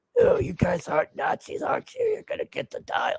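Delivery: put-on croaky, raspy old man voice, soft and breathy. Describing a scene, the speaker does the old hero: raspy eighty-year-old Indiana Jones voice. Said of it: "the voice of an eighty-year-old Indiana Jones with the raspy voice".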